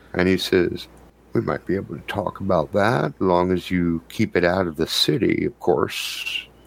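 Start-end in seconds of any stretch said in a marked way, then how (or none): 1.3-6.4 low, secretive, confiding conspiratorial voice. Narrating a scene to Trey, a man leans in to speak, lowered voice. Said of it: "he lowers his voice and leans in".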